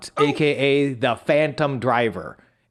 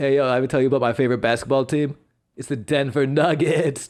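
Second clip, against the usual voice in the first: put-on voice sounding totally stoned. Recalling a character voice he did for four years: Bishop Timon stoner voice. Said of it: "that used to be the Bishop Timon uh, stoner laugh. Like".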